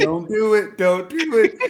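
put-on very high, drawn-out, loud scream. Retelling fighting tears at the film's end: retelling own screaming. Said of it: "I started screaming out loud. I was like".

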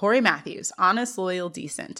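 normal talking voice

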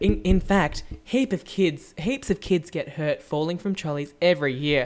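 put-on public address announcer voiceover delivery. Retelling a store's repeated loudspeaker message about trolleys: imitating a store PA announcement. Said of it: "you could do those voiceovers for life".

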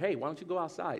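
calm, gentle, soothing and nice coaxing tone. Retelling how his wife sends him away, imitating wife's calm, nice tone. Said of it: "does it like in a calming like nice manner".

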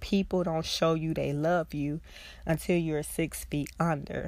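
normal talking voice

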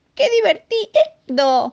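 very high, thrilled, excited shout. Reading a story, the lion cub riding his father's back, shouting excitedly. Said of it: "gritó el leoncito entusiasmado".

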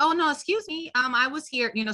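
friendly polite tone. Showing how they'd ask someone to move, in a friendly tone. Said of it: "So I tried to give a friendly tone".

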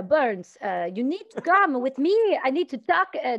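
put-on Québécois French-Canadian accent. Telling a story, the speaker quotes his sergeant calling him over: quebec french accent. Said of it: "i could do his accent".

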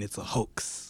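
whispered, muttered under the breath, barely audible. Picturing Steve rubbing gel into his hands: imitating Steve mumbling.

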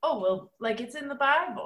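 mock old-fashioned, old-timey voice. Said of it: "that old-timey voice".

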